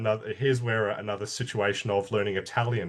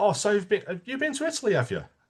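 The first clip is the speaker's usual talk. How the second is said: slight put-on English accent, very high, swooping; 11 semitones higher than usual. Retelling a conversation with a man, speaking in a slightly put-on English accent. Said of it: "I put on the English accent a little bit".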